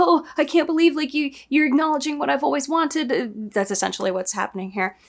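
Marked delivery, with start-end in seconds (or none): 0.0-3.5 play-acted tearful, crying voice through tears. Retelling a scene where a character starts crying, imitating someone crying. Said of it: "And she starts crying like".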